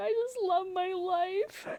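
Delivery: put-on very high, slow, teary crying voice. Retelling a partner crying outside holding a card: imitating Wayne crying. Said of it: "he's, like, crying".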